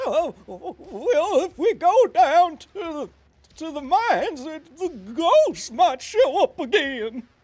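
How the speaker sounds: very high, loud, scared prospector voice, well stretched out. Voice actor trying out a new character for a reel, in a scared prospector Walnut Willie voice. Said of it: "So that's my scared prospect".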